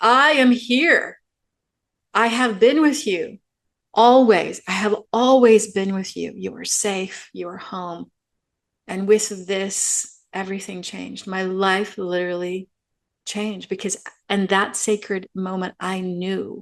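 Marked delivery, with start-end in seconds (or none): 0.0-8.1 huge, booming, loud shout. Recounting a sacred moment of transformation, as Sophia Divine Mother's booming shout. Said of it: "huge, booming female voice ... shouted".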